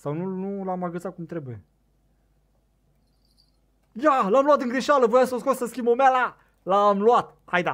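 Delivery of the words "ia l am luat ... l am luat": loud, high, excited yelling. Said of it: "O să încerc să mă calmez".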